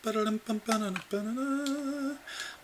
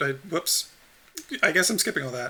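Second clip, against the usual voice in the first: ordinary talk, nothing marked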